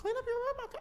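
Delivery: bad, very high, squeaky puppet voice. Trying again at a voice you can usually do, give a bad Elmo impression. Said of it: "It's Elmo".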